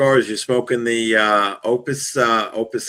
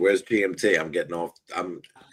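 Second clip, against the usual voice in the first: usual speaking voice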